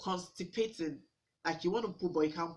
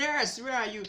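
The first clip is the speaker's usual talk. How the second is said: put-on shouting, called out loud, pitched high; 5 semitones higher than usual. Retelling a husband shouting for a nurse: imitating husband shouting. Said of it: "husband was literally shouting".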